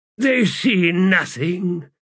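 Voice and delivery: high, hissing laugh through the words. A narrator reads a character's remark about two distant figures, hissing with a laugh. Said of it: "he hissed a laugh".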